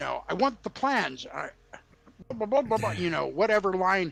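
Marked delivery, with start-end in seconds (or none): 0.3-1.3 put-on high, affected British accent. Retelling how David Prowse sounded delivering lines: high effete British accent. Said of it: "it was British and very effeminate".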